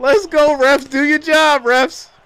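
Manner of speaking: high-pitched, loud yelling.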